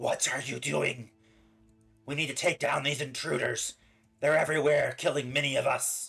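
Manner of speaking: fast, creepy-crawly talking spider voice. Narrating a spider that comes up to a player's character, speaking in its spider voice. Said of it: "in its spider voice".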